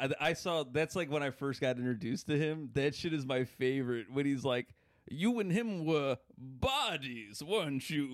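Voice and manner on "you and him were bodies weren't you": put-on Victorian-era accent, pitched higher. Quoting a line from Garth Marenghi's Dark Place: imitating Matt Berry's accent. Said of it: "that guy's so fucking funny with that accent".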